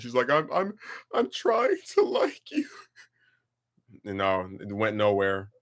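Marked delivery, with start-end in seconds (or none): 0.3-2.7 play-acted, very high, swooping, tearful crying voice. Retelling a phone call from a woman: imitating someone crying. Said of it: "this broad crying".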